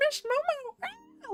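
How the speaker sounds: mock high-pitched teenage boy scream. Imitating the voice actor for Okarun screaming: imitating a high-pitched teenage boy scream. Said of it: "high-pitched, like, teenage boy voice".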